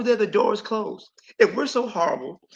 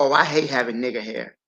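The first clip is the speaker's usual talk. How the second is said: put-on vitriolic venom, pitched lower; 9 semitones lower than usual. A teacher retells what a young student said in class, imitating a vitriolic tone. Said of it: "she said it with such vitriol in her voice".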